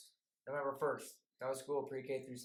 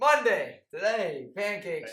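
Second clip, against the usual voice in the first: livelier, enthusiastic delivery, higher and louder; 6 semitones higher, 14 dB louder than usual. Reading the school menu after being asked for more enthusiasm: more enthusiastic voice. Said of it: "Let's get some more enthusiasm in your voice".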